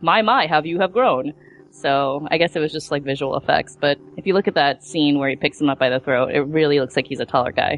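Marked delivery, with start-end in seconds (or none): none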